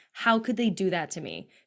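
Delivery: ordinary talk, nothing marked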